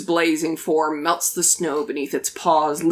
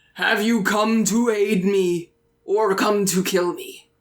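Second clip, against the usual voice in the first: hellhound creature, demon dog voice; 3 semitones higher than usual. Voicing a demon dog who dismisses the players: demon dog voice. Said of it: "of ash come through his nose".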